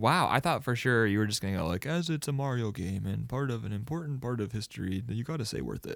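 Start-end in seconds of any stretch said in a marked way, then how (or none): 1.9-6.0 soft, put-on old man voice. Guessing how the other speaker would answer, in a put-on old man voice. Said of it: "That was more of like an old man".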